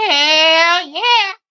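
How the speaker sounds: very high, very loud, shrill, booming drawn-out whoop. Doing a missing friend's catchphrase as an impression: imitating Carrie saying hell yeah. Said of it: "the best impression of her I could do".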